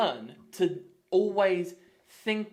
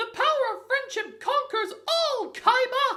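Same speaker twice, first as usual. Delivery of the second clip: put-on very high, mousy cartoon mouse voice. Commenting mid-battle in a game: Mickey Mouse impression. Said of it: "That was a great Mickey Mouse impression".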